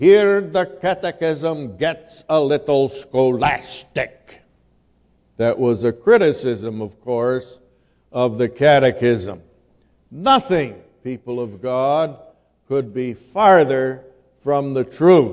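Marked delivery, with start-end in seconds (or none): 0.0-4.4 put-on heavy Dutch accent, slower pace. Quoting a man's comment on the catechism, in his heavy dutch brogue. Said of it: "in his heavy Dutch brogue".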